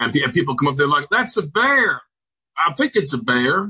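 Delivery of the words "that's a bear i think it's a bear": put-on southern drawl, slow, drawn out and high. Describing people coming to see a man's bear in a hole, southern accent. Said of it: "put a southern accent to this".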